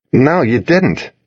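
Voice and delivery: angry, sharp, thrown-back tone. The narrator answers Cassidy, who muttered she didn't ask him to; angry. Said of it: "I said angrily".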